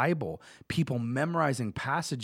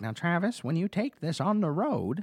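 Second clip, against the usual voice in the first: higher-pitched grandmother-style voice; 5 semitones higher than usual. Retelling his grandma's advice when she gave him a cell phone, imitating her voice. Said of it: "that's how my grandma talks".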